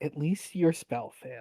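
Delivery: low-key, understated delivery. Speaking in character after a failed spell, the player says it quietly. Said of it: "says sort of quietly".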